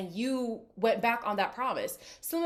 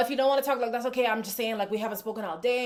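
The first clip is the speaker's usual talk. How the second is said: mock frantic, stressed, pleading-sounding voice. Retelling how Simba pleads with Angie to talk: imitating Simba sounding frantic and stressed. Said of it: "the man is frantic. He's stressed".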